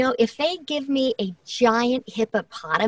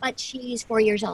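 normal talking voice

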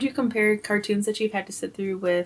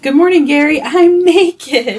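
very loud, high, drawn-out yell; 6 semitones higher, 12 dB louder than usual. Retelling a cartoon scene, imitating SpongeBob yelling. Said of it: "That was something that he yelled".

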